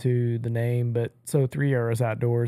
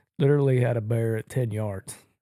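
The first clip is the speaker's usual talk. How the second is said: ordinary talk, nothing marked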